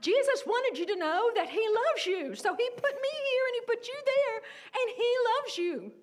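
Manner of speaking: loud, high hollering. Retelling calling out to a driver in another car: retelling own yell. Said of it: "and I was yelling this".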